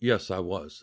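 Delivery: put-on solemn tone. Retelling answering a man's question about Jonestown: retelling a solemn tone. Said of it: "I'm very solemn tone".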